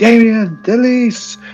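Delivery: shrieked, very high, ghostly screaming. Narrator voicing ghostly apparitions of a man and a woman, ghosts screaming names. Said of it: "they're screaming".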